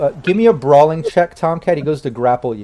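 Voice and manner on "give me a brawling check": usual speaking voice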